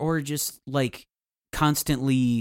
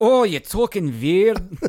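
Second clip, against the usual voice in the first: put-on Scottish voice, higher and louder; 6 semitones higher, 5 dB louder than usual. Acting out someone talking to Donald Duck: Scrooge McDuck voice. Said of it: "that's Scrooge".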